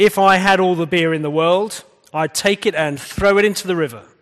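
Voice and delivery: loud, clear, declaiming preacher voice. Storyteller retelling a reverend ending his sermon, retelling a loud, clear announcement. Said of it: "in a loud, clear voice".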